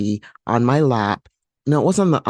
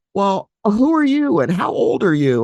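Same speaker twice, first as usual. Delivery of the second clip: put-on high, swooping toddler screaming; 9 semitones higher than usual. Retelling a dream where a child screams a question: imitating someone screaming. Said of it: "They were screaming at me saying".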